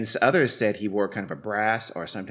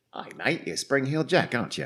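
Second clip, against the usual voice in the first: exact, flawless put-on English accent; 3 semitones higher than usual. Imagining what people in England would have said to Spring-heeled Jack, English accent. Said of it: "spoken in exactly that accent because that was flawless".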